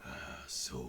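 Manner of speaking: low, spooky demonic whisper.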